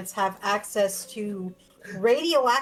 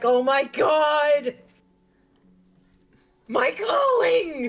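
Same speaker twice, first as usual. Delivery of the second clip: cracking voice, high, very slow and drawn out; 5 semitones higher, 4 dB louder than usual. Picturing Trevor's reaction to the raid, imitating Trevor, voice cracking. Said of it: "Voice crack went hard".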